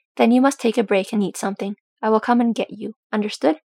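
ordinary delivery, nothing marked

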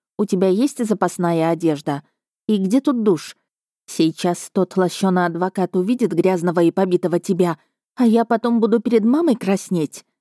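plain reading voice

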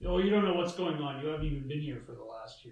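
mock-defensive delivery. Recapping a mother-son chat, acting out the distant son's reply: imitating a defensive son. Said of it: "he's all defensive".

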